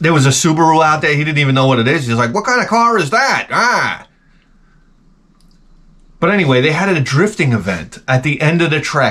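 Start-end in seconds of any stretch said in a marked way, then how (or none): 2.3-3.5 put-on high-pitched, very old announcer voice. Retelling what the eighty-five-year-old announcer said about a car: imitating an eighty-five-year-old announcer. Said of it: "he's like this eighty-five-year-old guy".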